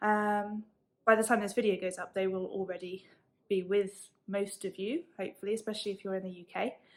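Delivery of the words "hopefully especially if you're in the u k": rushed, very fast chatter. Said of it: "I'm talking really fast".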